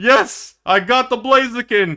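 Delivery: thrilled, excited, gleeful celebrating cheer. Retelling a player's reaction after a kill: imitating an excited player. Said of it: "this guy got so excited".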